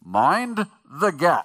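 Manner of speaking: loud English accent, as through really bad teeth. Describing the subway intercom announcement before a train arrives, in an english accent through bad teeth. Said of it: "it's said with an English accent through really bad teeth".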